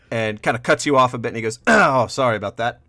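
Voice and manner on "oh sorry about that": put-on kindly, warm old bartender voice. A game narrator voices a bartender who just slammed a tankard, warm old bartender voice. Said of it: "a nice, warm, sort of old man bartender".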